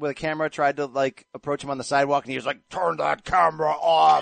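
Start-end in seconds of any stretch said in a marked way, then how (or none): 2.7-4.2 very slow, each word dragged, rough creaky croak. Retelling how a ballplayer told a reporter to stop filming, in a Buffalo Bill voice. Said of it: "Why are you giving him the Buffalo Bill voice?".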